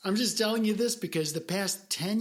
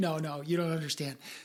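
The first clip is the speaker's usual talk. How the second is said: insistent sarcastic tone. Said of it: "sarcasm's beneficial for dodging that bullet".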